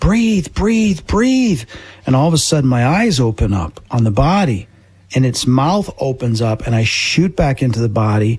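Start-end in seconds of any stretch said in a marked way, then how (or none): 0.0-1.6 mock, urgent, pitched-up, repeated yelling. Retelling yelling at your own body after it stopped breathing, a put-on yell. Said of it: "So I'm yelling at my body".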